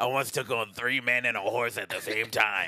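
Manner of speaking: put-on raspy voice of older woman smoker. Imitating a chain-smoking woman the others want as a guest: imitating a chain-smoking older woman. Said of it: "She one thousand percent has that voice".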